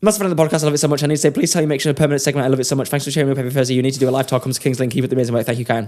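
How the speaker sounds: reading at breakneck, rapid-fire pace. A podcast host reads out a listener message to prove it, reading very fast. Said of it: "Did you know I can read really fast?".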